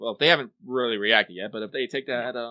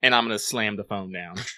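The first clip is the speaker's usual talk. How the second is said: ordinary talk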